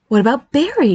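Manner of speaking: light, happy, cheerful tone. A mother suggests a name to her son: asking happily. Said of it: "she asked happily".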